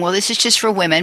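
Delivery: ordinary talk, nothing marked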